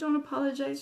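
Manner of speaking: ordinary delivery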